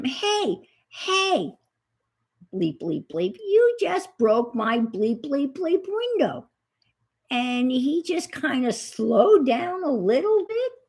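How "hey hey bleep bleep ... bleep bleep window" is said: mock furious, swooping angry yell. Retelling yelling at the driver who broke the speaker's window and drove off. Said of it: "I'm yelling at him".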